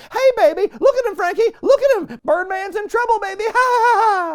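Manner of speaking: very high yelling with a cackle at the end. Retelling a ringside manager yelling at a parrot: imitating Jimmy Hart yelling. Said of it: "Jimmy Hart at ringside just yelling at Frankie".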